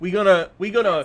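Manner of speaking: exaggerated, laid-on-thick Michigan accent. Showing the others how you would speak like a Michigander, in a put-on Michigander accent. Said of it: "You want me to speak like a Michigander".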